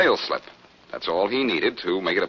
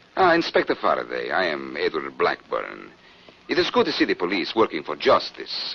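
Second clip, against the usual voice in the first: put-on Central European accent; 2 semitones lower than usual. Asked about a man's accent on the phone, the speaker tries an Edward Blackburn impression. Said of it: "Like this?".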